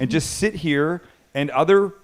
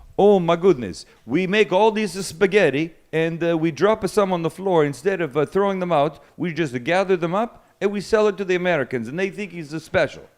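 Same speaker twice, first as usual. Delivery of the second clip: put-on Italian accent; 4 semitones higher than usual. Imagining what a pasta factory worker once said, in an Italian accent. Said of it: "Is that a good Italian accent".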